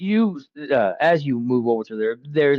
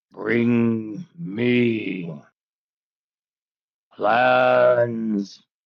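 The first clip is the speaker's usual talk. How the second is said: very deep, rattling voice with me drawn out. Game master voices the Mole King, who pauses before speaking: very deep, rattling voice. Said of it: "in a very deep, rattling voice".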